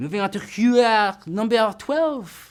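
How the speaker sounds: very bad French accent. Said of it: "the worst French accent".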